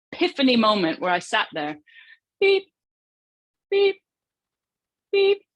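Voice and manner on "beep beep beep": high, loud repeated beeping sounds. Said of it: "You hear all the beeping".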